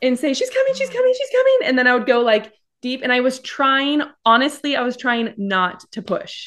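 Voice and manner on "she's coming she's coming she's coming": very high-pitched, rushed, panicky voice. A speaker retells giving birth, repeating what she said between pushes, imitating her high panic voice. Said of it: "I would go high pitch, almost like a panic voice".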